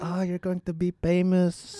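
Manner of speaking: high, doting mom voice. Retelling what mom said, imitating mom's accent. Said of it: "The accent is so sick".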